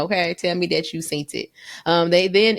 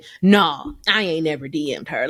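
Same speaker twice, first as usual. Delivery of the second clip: put-on sarcastic tone. Retelling how someone denied sending a dm: imitating a sarcastic denial. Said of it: "I felt like he was being sarcastic".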